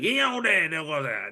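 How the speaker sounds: bad put-on Cajun accent. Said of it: "that accent was, it, bad, so bad".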